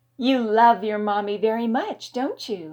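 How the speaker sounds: soothing, calming, comforting tone. The narrator speaks to a young boy, in a soothing tone. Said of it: "I asked in a soothing tone".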